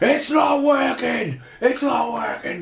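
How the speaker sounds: high, slow furious shout.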